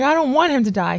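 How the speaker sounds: acted bawling through tears. Recalling the car ride home, quoting what was said while bawling. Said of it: "I'm bawling. I'm crying".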